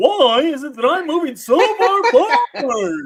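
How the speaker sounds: very high, loud, drawn-out, slow delivery. Imagining a footballer speaking, in a Jerry Seinfeld voice. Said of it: "Jerry Seinfeld's voice coming out of Declan Rice".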